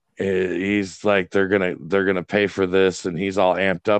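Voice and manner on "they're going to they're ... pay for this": ordinary delivery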